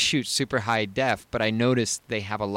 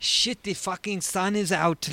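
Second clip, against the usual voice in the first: put-on French-accented English, pitched up; 10 semitones higher than usual. Recounting watching behind-the-scenes footage: Pierre Woodman French accent. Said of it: "in his French accent, he's like".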